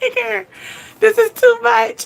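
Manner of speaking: very high-pitched words squeezed through laughter. Retelling what she said to Tigger: retelling own laughing words. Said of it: "I started laughing like".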